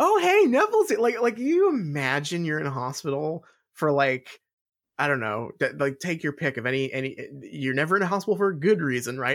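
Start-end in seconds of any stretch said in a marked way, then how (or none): 0.0-1.0 acted, very high, loud, thrilled excited voice. Imitating a character greeting a friend in a hospital: imitating someone excited.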